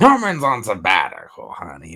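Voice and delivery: swooping comic-book villain voice with swinging pitch. Retelling a movie scene, quoting the Green Goblin: Green Goblin voice. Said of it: "it's Goblin talking".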